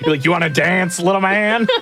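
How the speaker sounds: mock menacing mob boss voice. Teasing the other speaker about how they talked to a fish, in a mock mob boss voice. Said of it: "you said it like a mob boss".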